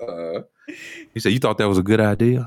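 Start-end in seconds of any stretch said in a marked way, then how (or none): 1.3-2.5 acted-out whisper in a put-on bear voice. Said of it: "he will whisper in your ear".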